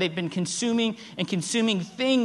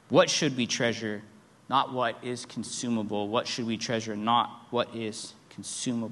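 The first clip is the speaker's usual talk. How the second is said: plain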